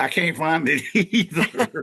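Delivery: put-on, very high, slow Southern drawl. Retelling what a man told the speaker, in a put-on Southern accent. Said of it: "that Southern accent".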